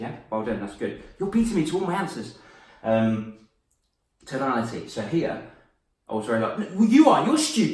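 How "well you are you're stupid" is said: loud, quick, aggressive tone, much higher. Speaker demonstrates the first tone example in a lesson on tonality: loud, aggressive, quick tone. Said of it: "My tone got louder, more aggressive, quicker".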